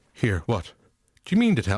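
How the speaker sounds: put-on daft Irish priest character voice. Imagining a confused viewer at the screening, as a Father Dougal impression. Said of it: "I went full Dougal there".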